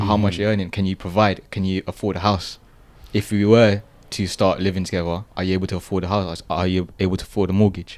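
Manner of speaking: usual speaking voice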